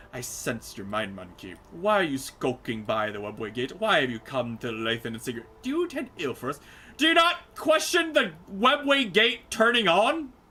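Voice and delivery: loud, swooping, accusing tone of dissatisfaction. Voicing a character who questions the visitor: accusatory, dissatisfied tone. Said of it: "accusatory tone of dissatisfaction".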